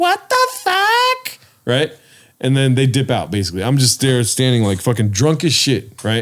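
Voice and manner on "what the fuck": shrill, very high cry, "fuck" drawn out. Retelling a drunk night by the hot tub, imitating Yesenia's shrill voice. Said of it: "I remember her shrill voice".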